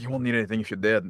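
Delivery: plain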